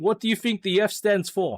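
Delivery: sudden, high-pitched put-on South African accent. Wondering aloud what a letter in a unit stands for: put-on South African accent. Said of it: "I put on a South African accent for that".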